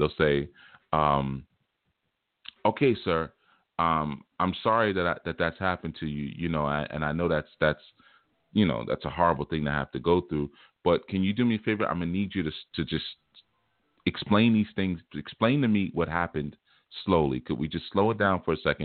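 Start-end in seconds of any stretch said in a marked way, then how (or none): none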